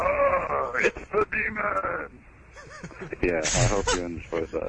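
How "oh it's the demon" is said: very high, slow, swooping, rasping, creaky alien creature voice. A speaker presents his imitation of an elite for entertainment, imitation of an elite. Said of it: "my imitation of an elite".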